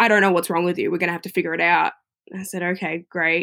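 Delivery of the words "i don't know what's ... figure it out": mock cold, stern, blunt, quick delivery. Retelling what a woman running scans said to her: imitating a cold, stern voice. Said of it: "in such a cold, stern voice".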